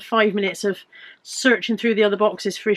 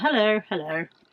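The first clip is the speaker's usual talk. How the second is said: extremely posh, upper-class puppet voice; 4 dB quieter than usual. Voicing a puppet named Maria saying hello: puppet voice that sounds extremely Tory. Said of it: "Maria sounded extremely Tory then".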